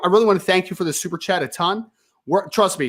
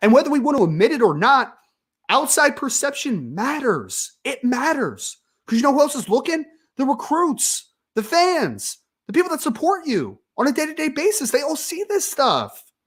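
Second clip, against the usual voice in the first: exasperated, frustrated voice raised and pitched up; 7 semitones higher than usual. Speaking to the people being criticized, super frustrated, in a frustrated raised tone. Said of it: "I'm going to lower my tone".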